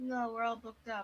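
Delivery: heavily sarcastic, insincere delivery. Voicing a character asked whether rooms are available: sarcastic. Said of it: "she's being sarcastic".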